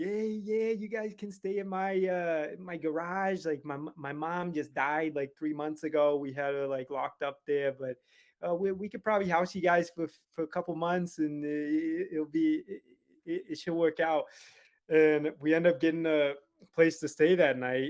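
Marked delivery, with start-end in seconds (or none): 0.0-14.3 put-on casual, chatty New York accent. Retelling what a lady at church said to them, in a New York accent. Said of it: "she has this New York accent".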